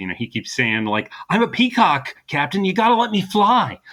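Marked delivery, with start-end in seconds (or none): 1.3-3.7 high-pitched, frustrated, pleading tone. Quoting a frustrated cop character's repeated line: Mark Wahlberg impression. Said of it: "that's a good Mark Wahlberg".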